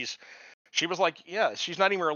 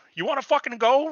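play-acted, very high-pitched, shrill shouted yell; 10 semitones higher, 5 dB louder than usual. Retelling a story of a shout out a car window: imitating someone yelling. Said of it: "He yells out the window".

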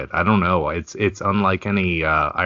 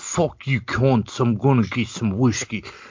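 high-pitched, terrible put-on Irish accent; 6 semitones higher than usual. Quoting Conor from the UFC on wanting whiskey, in a bad Conor impression. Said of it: "that's the worst accent ever".

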